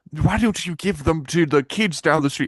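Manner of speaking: put-on British accent. Retelling what a woman said to them: put-on British accent. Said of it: "I'm doing British accent".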